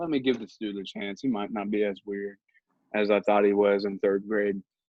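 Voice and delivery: normal talking voice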